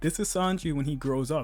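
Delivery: plain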